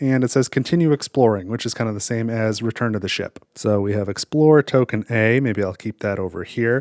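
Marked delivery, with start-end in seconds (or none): none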